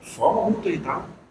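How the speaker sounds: soft, fast, feigned calm tone. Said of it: "ela tenta mudar o tom de voz".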